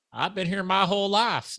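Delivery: put-on fumbled Southern accent. Retelling what a seventy-five-year-old man named Brantley said, in a bad Southern accent. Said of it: "I can't do a good Southern accent".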